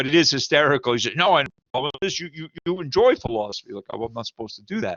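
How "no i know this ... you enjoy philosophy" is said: high-pitched, pointed, accusing tone. Discussing philosophy, retelling what someone said to him in a mock-accusatory tone. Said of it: "He said to me in like an accusatory tone".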